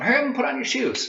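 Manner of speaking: put-on, very high, hollered yell. Retelling a movie scene where a child is told to hurry: imitating someone yelling. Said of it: "So he yells at him".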